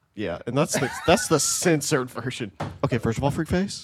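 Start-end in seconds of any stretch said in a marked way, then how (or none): 2.8-3.9 low-volume drawl, every ending lilting up. Working on an impression for the others: Bobby Lee impression. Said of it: "I'm working on my Bobby Lee impression".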